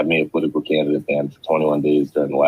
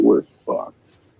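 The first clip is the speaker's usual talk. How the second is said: ordinary talk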